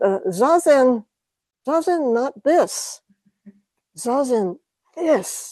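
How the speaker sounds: put-on Japanese accent. Retelling a visiting teacher's words at a lecture: heavy Japanese accent. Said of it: "he had a pretty heavy Japanese accent".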